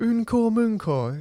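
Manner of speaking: attempted Welsh pronunciation, cockney accent. Saying a Welsh phrase for a quiz: attempted Welsh pronunciation with Cockney. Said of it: "I've probably got the accent completely wrong with a bit of Cockney thrown in".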